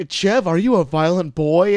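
put-on British TV talk show host voice. Retelling a scene from a british talk show: imitating a british talk show host. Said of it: "it's like a British Maury where".

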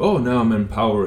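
plain

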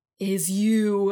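mock dramatic delivery. Retelling a cheesy movie scene of a dad talking to Tony: imitating an over-dramatic movie line. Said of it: "a thirty-second dramatic pause".

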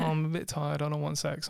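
ordinary delivery

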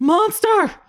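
very high, panicked, freaked-out yelp. Voicing a captive who wakes, sees Ulo: freaking out in panic. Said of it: "starts freaking out".

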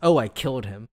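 imitated, dead-straight deadpan delivery. Retelling a character's reply about what happened to him: imitating Olivia's deadpan line. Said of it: "Olivia just very deadpan goes".

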